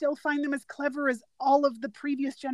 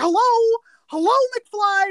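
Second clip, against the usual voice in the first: put-on loud, raised, belted-out old-man voice; 8 semitones higher, 9 dB louder than usual. Retelling a funny movie moment, imitating old Biff. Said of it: "old Biff was like".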